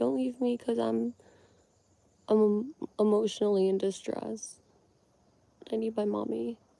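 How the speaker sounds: tearful, high, drawn-out crying plea. Retelling clinging to a counter cabinet begging Mom: imitating own past crying.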